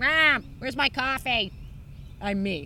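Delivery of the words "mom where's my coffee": put-on yappy American accent, high and loud. Imagining someone working at the american consulate, yappy american accent. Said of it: "some yappy American in the American consulate being like".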